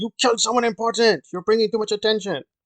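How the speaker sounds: high, mad, snapping scolding tone.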